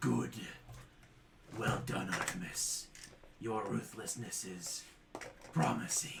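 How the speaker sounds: deep, low rumbling voice that resonates. A voice from the eye speaks to Artemis: deep rumbling voice. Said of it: "a deep rumbling voice".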